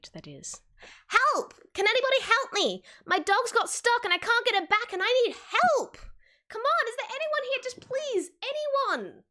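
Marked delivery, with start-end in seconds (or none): 1.1-9.1 very high, frantic, desperate little cartoon pleading voice. Voicing a little ragdoll toon running up the street: begging for help. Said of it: "a little ragdoll-like toon comes running up the street".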